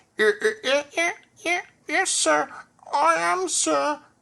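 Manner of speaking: muffled, very high, very slow, drawn-out voice. Reading a story, voicing Percy answering from behind a pile of clothes, muffled voice. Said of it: "he said in a muffled voice".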